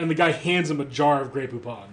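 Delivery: ordinary talk, nothing marked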